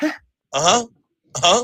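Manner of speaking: vacant, clueless, blank-sounding grunts and replies. Retelling how the other announcer just sits there: imitating Eli Manning sitting clueless. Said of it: "the dumbest look on his face".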